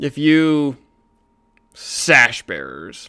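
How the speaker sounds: venom-laced, very drawn out, slow, swooping. Narrating a man's reply to the sash bearers: venom in his voice. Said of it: "he says it with with venom in his voice".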